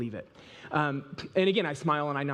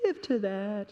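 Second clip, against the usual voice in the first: high, commanding, divine-sounding voice that cracks; 5 semitones higher than usual. Imitating the Lord telling someone where to give: imitating the Lord, voice cracking. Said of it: "my voice cracked when I said that".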